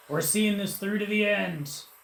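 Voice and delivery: loud, high-pitched shouting. A player's character answers the last-chance call, yelling over the storm. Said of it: "He yells over the storm".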